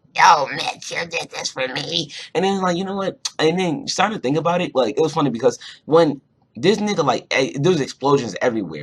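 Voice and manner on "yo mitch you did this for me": put-on voice made to sound annoying. Retelling a cartoon episode, quoting Starla: annoying Starla voice. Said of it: "Her voice is like".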